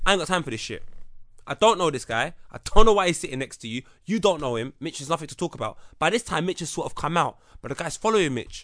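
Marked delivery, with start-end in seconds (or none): none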